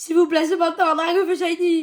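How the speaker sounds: desperate, hopeful, high-pitched, loud shout.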